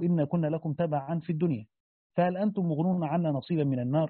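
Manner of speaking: normal talking voice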